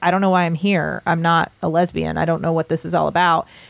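ordinary talk, nothing marked

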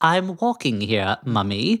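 slow put-on English accent, words drawn out. Showing how a young english nephew sounds: imitating a child's english accent. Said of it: "he's English, so he sounds like this".

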